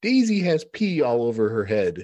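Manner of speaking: put-on small child's voice, high-pitched and slow.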